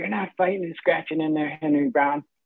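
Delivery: rough, raspy, hoarse voice. Speaker imitates a man he used to hear say this: hoarse voice. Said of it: "He had this hoarse voice. He'd be like".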